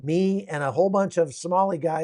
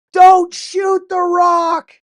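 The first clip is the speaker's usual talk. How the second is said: booming, very loud, very high, very slow drawn-out yell; 14 semitones higher, 12 dB louder than usual. Retelling a warning shouted at shooters: imitating someone yelling. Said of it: "And I started going".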